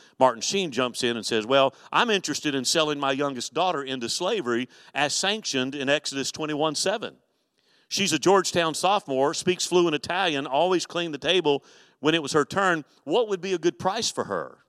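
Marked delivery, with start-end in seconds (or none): none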